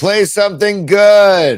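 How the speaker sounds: very high, loud heckling yell. Retelling how a man in a quiet room yelled out: imitating a yell. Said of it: "yells out".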